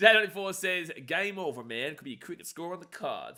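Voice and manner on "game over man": sudden switch to put-on American accent. Reading out a viewer message from j ninety-four, in an american accent. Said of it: "Don't know why I gave you an American accent just then".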